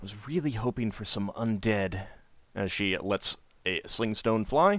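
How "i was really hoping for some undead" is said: muttered quietly under the breath, quieter. Voicing a character who slings a stone: muttered under her breath. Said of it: "you hear her say under her breath".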